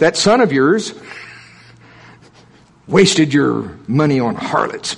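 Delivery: acted-out disgusted tone, words thick with disgust. Retelling the elder son's complaint to his father, retelling with disgust. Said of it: "You can just hear the disgust in his voice".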